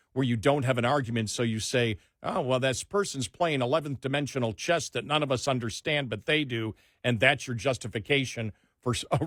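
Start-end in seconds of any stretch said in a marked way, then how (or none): none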